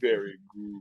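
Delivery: put-on deep villainous tone. Imitating a creator who says the line: imitating a deep villainous voice. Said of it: "but in the most villainous way".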